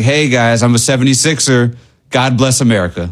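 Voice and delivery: normal talking voice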